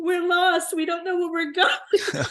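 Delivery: mock little-kid crying voice, high and tearful. Retelling a road trip, quoting a little brother in the back seat: imitating a crying child. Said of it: "my little brother is just in tears, crying".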